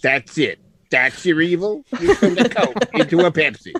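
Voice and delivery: movie talking dog voice. Recalling a favorite comedy movie scene: Little Nicky talking dog voice. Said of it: "You do that voice really well".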